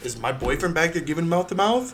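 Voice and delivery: all-excited, thrilled, eager tone with rising pitch. Retelling what a woman asked about her boyfriend: imitating excited woman. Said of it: "all excited".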